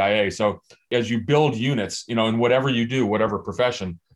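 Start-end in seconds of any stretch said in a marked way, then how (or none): none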